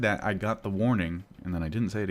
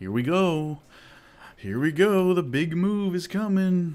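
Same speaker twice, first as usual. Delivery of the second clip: loud, high sarcastic hype. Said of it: "That's sarcasm".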